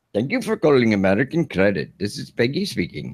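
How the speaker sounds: put-on Indian accent. Demonstrating a call-center greeting in an Indian call-center accent. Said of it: "she can do the Indian accent".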